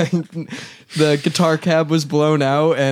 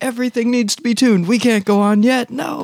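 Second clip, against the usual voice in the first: mock scream, higher pitch; 8 semitones higher than usual. Retelling how the drummer reacted to a dusty house kit: imitating someone screaming. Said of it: "is just screaming".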